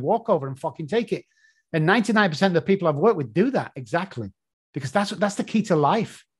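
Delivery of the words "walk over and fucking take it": put-on speaking with a British English accent. Repeating their own advice the way others hear it, in an English accent. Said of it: "they hear my stupid English accent going".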